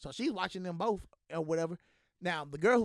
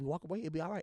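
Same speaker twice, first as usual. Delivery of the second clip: put-on low, calm voice, quieter; 2 semitones lower, 4 dB quieter than usual. Retelling pleading with a girl not to fight: imitating talking calm and low. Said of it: "I'm trying to talk low, you know, calm and low".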